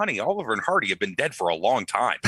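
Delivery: ordinary talk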